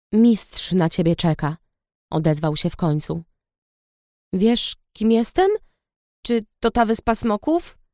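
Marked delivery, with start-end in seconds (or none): 6.2-7.7 uncertain, hesitant, unsure tone. The narrator asks the dragon a question, uncertainly. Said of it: "Spytałam niepewnie".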